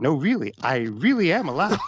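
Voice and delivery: very courteous, insistent tone. Recounting what a tv show bear character said, retelling a polite insistence. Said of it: "said very politely".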